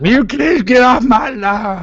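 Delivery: high toothless codger voice. Joking about talking after losing teeth: put-on toothless old man voice. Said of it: "I have to talk like this all the time".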